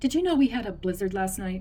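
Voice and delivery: ordinary delivery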